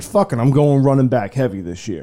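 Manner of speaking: usual speaking voice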